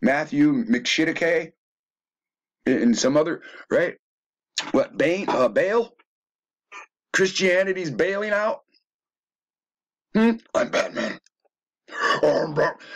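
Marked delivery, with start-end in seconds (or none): 10.1-12.9 put-on demonic voice, higher. Speaker riffing on movies, quoting Batman: demonic Batman voice. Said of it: "the most demonic voice".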